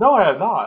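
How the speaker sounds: very loud, high, hyper, wired, amped-up outburst. Co-host redoes a scripted denial when asked to repeat it, hyper and wired. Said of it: "now it just sounds like you took coke or something".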